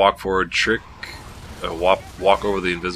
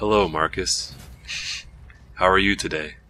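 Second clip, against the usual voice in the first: robotic, synthetic security-system voice. The computer voice of a game's security system greets the player, in a computer voice. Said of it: "kind of a computer voice".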